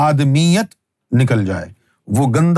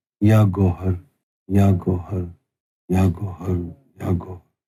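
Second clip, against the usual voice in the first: put-on very slow, very soft voice, lower; 7 semitones lower, 5 dB quieter than usual. Telling how you once saw Sarkar repeating a call, imitating a very slow, very soft voice. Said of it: "बड़ी ही धीरे धीरे, बहुत ही धीमी आवाज में कह रहे हैं".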